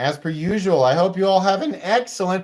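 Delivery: voice cracking, breaking mid-word on excellent. Host signing off to viewers after a prize giveaway: voice cracking. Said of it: "my voice cracked".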